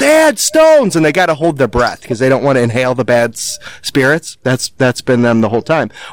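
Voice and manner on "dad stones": put-on high, excited children's yelling. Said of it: "always yell".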